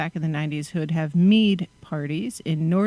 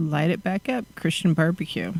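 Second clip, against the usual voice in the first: usual speaking voice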